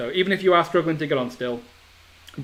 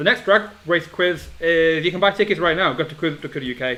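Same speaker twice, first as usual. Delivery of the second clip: very fast, rushed, rattled-off delivery; 3 semitones higher than usual. Answering when the next Drag Race quiz is, very fast. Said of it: "I said that very quickly".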